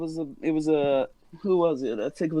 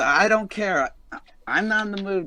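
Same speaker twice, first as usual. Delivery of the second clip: little beast, small creature voice; 2 semitones higher than usual. Voicing a small creature that wants to charge: voicing a small creature. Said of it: "and the small one says".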